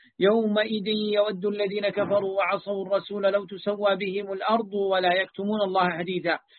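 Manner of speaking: ordinary talk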